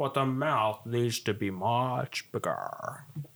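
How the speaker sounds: storybook alligator voice stretching the word "much". Reading a picture book aloud, voice the alligator talking to Ben. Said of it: "My alligator voice".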